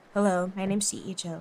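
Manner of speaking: put-on low voice. Practicing a movie-trailer voice for an introduction, put-on low voice. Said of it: "Is that low enough?".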